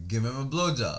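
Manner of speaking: ordinary talk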